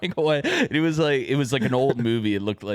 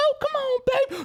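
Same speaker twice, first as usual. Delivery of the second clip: put-on angry character voice, higher pitch. Retelling how the movie character talks when pissed: imitating Itsy Bitsy Spider getting pissed. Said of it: "when he would get pissed".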